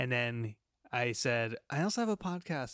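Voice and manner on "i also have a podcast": shy, meek, timid voice, higher in pitch. Retelling what he told a stranger on a cruise, retelling saying it meekly. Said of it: "I said it as meekly and as timid".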